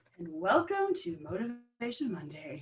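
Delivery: radio broadcaster announcer delivery. Opening episode twenty-nine of the Georgie and Patty Show, in broadcaster voice. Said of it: "That's my broadcaster voice".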